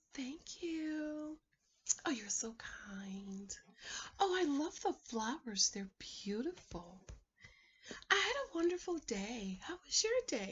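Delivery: very soft, hushed, gentle feminine voice. Advising women how to talk when a date brings flowers; soft feminine voice. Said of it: "you speak in a soft, feminine voice".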